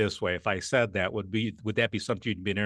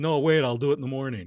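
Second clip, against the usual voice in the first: put-on defiant child voice, higher and louder; 4 semitones higher, 4 dB louder than usual. Demonstrating a child's reply after being told to do homework, rebellious child talking back. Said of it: "rebellious child".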